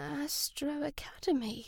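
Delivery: hushed, very soft murmur, disbelieving tone. A passenger on the wrong minibus hears the academy's name announced, murmuring in disbelief. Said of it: "Abdi murmured in disbelief".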